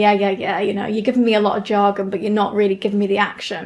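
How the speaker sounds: plain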